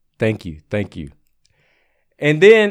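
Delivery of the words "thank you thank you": mumbled under breath, lower and quieter. Retelling what the guy to the left said at the bar: imitating someone mumbling under breath. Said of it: "he mumbles under his breath".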